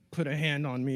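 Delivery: play-acted, full-throated, top-of-the-lungs bellowing yell. Retelling a wrestling segment, imitating John Cena yelling. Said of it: "yelling, like, at the top of his lungs".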